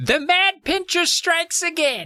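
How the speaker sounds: mock action-hero yell, very high, drawn out, swooping. Retelling a scene from a book where a character yells: retelling a character's yell. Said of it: "And she yells".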